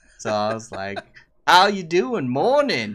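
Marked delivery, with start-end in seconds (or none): 1.5-3.0 booming, loud, swooping put-on cowboy accent. Retelling how he talked at work imitating a game's main character, in a cowboy accent. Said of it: "act that cowboy accent".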